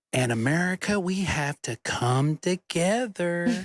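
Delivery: put-on very slow, condescending tone, as to small children. Mocking a politician who talked to everyone like kindergartners: imitating Bobby Jindal talking down like to kindergartners. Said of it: "he talked to everybody like this".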